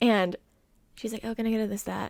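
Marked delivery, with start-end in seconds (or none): 1.2-2.1 flat, bored, uninterested whatever monotone. Imitating a woman ordering from her, imitating a bored monotone. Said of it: "Very monotone, very whatever".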